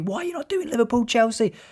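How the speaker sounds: high, wide mock shout, impatient.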